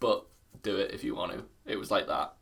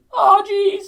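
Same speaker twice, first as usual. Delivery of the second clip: very high-pitched, loud, squeaky yelp; 14 dB louder than usual. Doing an impression when asked for one: Morty impression. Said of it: "Morty's is just like me when I wake up".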